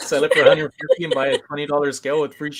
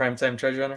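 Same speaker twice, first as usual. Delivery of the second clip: ordinary talk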